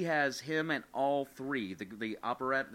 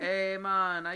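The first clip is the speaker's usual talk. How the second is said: imitated Jamaican accent; 6 semitones higher, 4 dB louder than usual. Describing characters, voicing the jamaican drummer boy in a jamaican accent. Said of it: "the Jamaican drummer boy".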